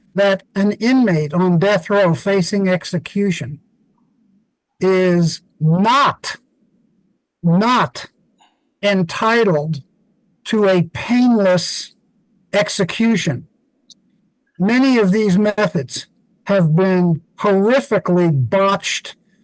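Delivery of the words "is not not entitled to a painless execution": slow, measured, halting, broken into careful pieces. Speaking to an interviewer, stressing a point that is hard to believe, speaking slowly. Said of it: "I want to say this slowly".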